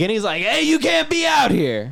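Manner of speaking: mock yelling. Retelling how a man with a flashlight yelled at the group, retelling a yell. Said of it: "this guy starts yelling at us".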